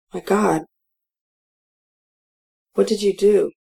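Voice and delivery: feeble, weak, faint, strength gone. Nan stares at the packed trunk in the parking lot; weakly. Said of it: "she says weakly".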